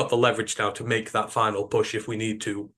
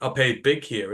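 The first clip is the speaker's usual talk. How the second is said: ordinary talk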